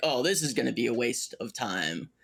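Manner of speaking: plain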